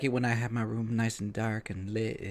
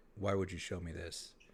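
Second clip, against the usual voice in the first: mock-accusing tone, quieter and lower pitch; 4 semitones lower, 12 dB quieter than usual. Retelling how a woman turned and made eye contact, mock-accusing tone. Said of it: "she said it in that tone".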